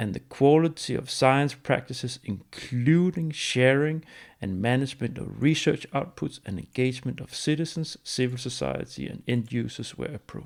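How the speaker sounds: slow, deliberate, measured reading aloud, word by word. Reading a long sentence aloud to listeners, reading out slowly. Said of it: "I'm going to read it out as slowly".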